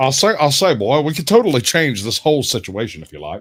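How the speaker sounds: rooster-like cartoon voice. Offering to change the situation, in Foghorn Leghorn voice. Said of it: "That's Foghorn Leghorn".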